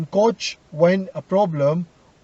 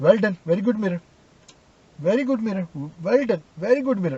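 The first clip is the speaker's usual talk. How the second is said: play-acted, ironic, pointed, over-repeated sarcastic tone. Showing how an instructor's repeated praise sounds: imitating sarcastic praise. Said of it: "pointing on me as a sarcastic way".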